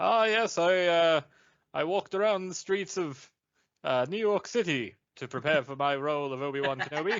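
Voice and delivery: played posh British actor voice. Riffing with a co-host about an actor's role prep, doing an Alec Guinness impression. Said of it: "Sir Alec Guinness was like".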